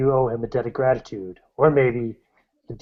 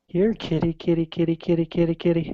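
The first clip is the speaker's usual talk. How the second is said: put-on little girl voice, higher; 6 semitones higher than usual. Narrating a story scene, speaking the words from a character's mouth in a little girl's voice. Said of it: "you hear a little girl's voice say".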